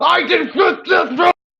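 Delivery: seething, spitting rage, very high and loud. A narrator voices a commander answering guards who say he just resigned: spitting fury. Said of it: "He's in this spitting fury".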